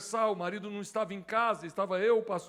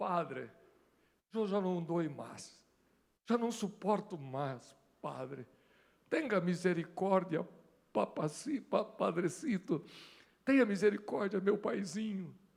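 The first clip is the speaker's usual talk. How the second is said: tearful, begging, crying, sobbing voice; 4 dB quieter than usual. Retelling what a woman said while being burned, imitating her crying plea.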